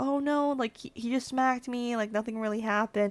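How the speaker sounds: mock-scared, fearful-sounding delivery. Retelling own reply to someone pushing for a campus police report, retelling own scared reply. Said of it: "I'm scared".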